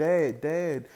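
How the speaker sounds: normal talking voice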